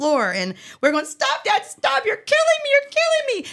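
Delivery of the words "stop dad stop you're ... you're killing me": very high, squealing, giggling, laughing voice. Recalling being tickled on the floor by dad, re-enacting laughing pleas while tickled. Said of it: "As we were laughing".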